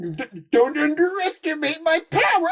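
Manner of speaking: high-pitched, whiny, slow, sing-song, swooping up and down. Mocking the line of a whiny little kid: whiny young Darth Vader voice. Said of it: "that whiny little kid".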